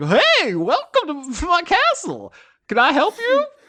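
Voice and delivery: very high, bouncy, swooping cartoon character voice. Voicing a magically animated door greeting the players: cartoon talking door voice. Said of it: "cartoon rubber hose-esque eyes open up on the front of the door".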